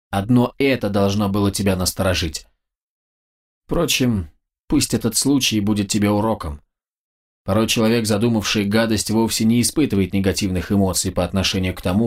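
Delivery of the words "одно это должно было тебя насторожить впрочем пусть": ordinary delivery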